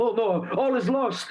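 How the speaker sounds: put-on panicked voice. Playing a character showing bad leadership in a camp: put-on panicked voice. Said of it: "I look like I'm panicking and just going like".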